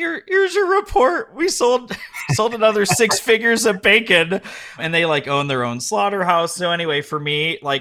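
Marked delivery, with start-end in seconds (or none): 0.0-4.4 very high, loud, sobbing, tearful wail.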